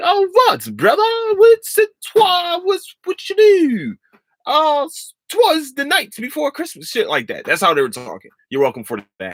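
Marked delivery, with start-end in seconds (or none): 0.0-6.9 very high, drawn-out, swooping fake old English accent. Imitating how they talked while smoking herbs; mock old english accent. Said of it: "they talked in that little English tone".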